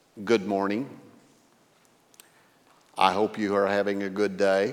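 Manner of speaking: absolutely flat, unchanging monotone delivery. Retelling how the clerk Rick answered the host pastor's greeting, imitating Rick's flat monotone. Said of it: "says in an absolute monotone".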